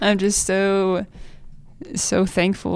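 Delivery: slow, on the edge of tears. Thanking the church and the families here, on the verge of tears. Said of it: "I feel like I'm about to cry".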